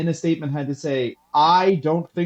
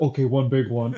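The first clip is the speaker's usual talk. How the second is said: put-on big man voice, pitched lower; 3 semitones lower than usual. Retelling Shaq breaking a trampoline, quoting him: imitating Shaquille O'Neal. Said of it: "And then he went".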